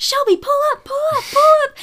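panicked, frantic screaming, very high. Retelling her dad in the cockpit calling to her mom, imitating dad screaming. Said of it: "he's screaming".

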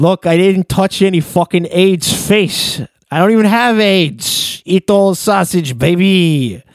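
put-on New York accent. Joking around about how he talks, imitate Andrew Cuomo with a New York accent. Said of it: "does Andrew Cuomo talk with a New York accent?".

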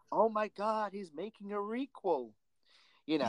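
terrible put-on American accent, high-pitched. Discussing a movie scene, quoting a character's line in a terrible American accent. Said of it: "Sorry about my terrible American accent".

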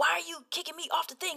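acted angry protest. Retelling another player's complaint about being kicked off: imitating someone getting mad. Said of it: "then you would get mad".

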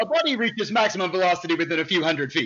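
rattled off quickly, dead serious. Speaker retells a favorite quote from a character; Zarkon's deadpan line, retold. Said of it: "So deadpans that".

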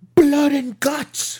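very loud, very high-pitched booming roar. Retelling how Regal answered Kingston on Dynamite: imitating Regal. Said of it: "in only the way Regal can do it".

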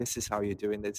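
mock laughing to oneself. Retelling own past words to oneself: retelling laughing to oneself. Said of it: "it's also like a laughing, smiling with myself".

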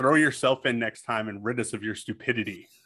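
usual speaking voice

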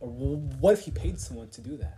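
normal talking voice

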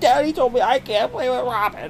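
acted, very high, whiny, wailing little-kid sobbing. A father retells his son running to the other parent, imitating a kid fake-crying. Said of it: "he's all crying".

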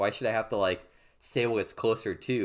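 ordinary talk

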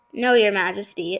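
ordinary talk

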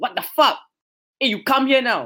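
abrupt, sudden, high-pitched yelled call. Recounting a woman suddenly yelling at an approaching man, retelling a woman's shout. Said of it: "I just heard her just shouting".

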